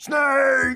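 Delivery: shrill, gravelly shout, very high-pitched. In a tabletop scene, one of them spots a huge snake: gravelly yell. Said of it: "yells out in a gravelly voice".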